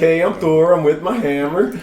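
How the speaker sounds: high loud put-on Swedish accent.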